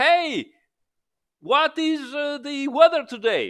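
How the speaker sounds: high, loud screaming, as if across a room.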